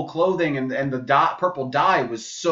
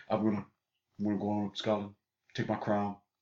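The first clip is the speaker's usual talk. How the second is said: very low, very quiet big-man voice; 7 semitones lower, 13 dB quieter than usual. Quoting Forest Whitaker as Idi Amin, but doing a Shaq voice. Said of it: "Why are you doing Shaq?".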